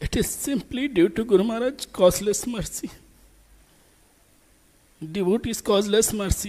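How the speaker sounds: voice thick with emotion. Sharing memories of a beloved guru before a gathering: choked-up voice. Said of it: "as it is completely choked up".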